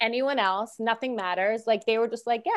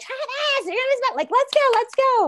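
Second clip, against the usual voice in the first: put-on very high, frantic yell; 14 semitones higher, 3 dB louder than usual. Speaker recounting how she yelled to Travis, retelling a yell. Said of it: "yelling like".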